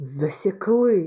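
angry exclamation. Harry reacts after the plane spots the fugitives, angry. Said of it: "злісно сказав Гаррі".

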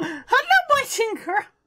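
very high, squeaky little puppet-monster voice. Describing a monster jumping out at players, in an Elmo voice. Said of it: "Should I do Elmo?".

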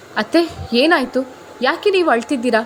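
plain

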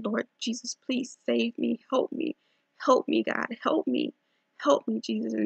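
desperate crying out. Speaker recounts a terrifying night in bed, retelling a desperate plea. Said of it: "I just begin to call on".

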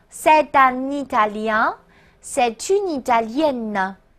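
slow "c'est un Italien, c'est une Italienne" with liaison. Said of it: "再给我来一遍啊".

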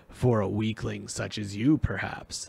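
snarling voice. Reading the voice's retort to the servant, snarling. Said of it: "the voice snarled".

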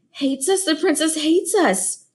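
sorrowful, wounded, sad voice with high-pitched dismay. Narrator reading a roach reacting to the princess's fit, murmured sadly. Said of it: "murmured Timp sadly".

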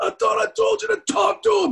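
very high, loud, wild screaming yell. Recounting another corpsman yelling at the man treating him, retelling a corpsman screaming. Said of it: "And he's screaming at him".

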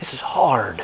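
hushed, soft, unvoiced whisper.

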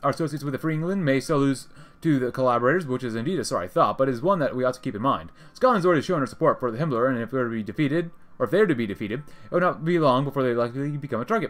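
ordinary talk

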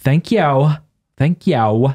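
put-on high, drawn-out valley girl voice. Complaining about how a local woman says thank you, imitating how she says thanks. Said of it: "Sounds like she's a, like a valley girl".

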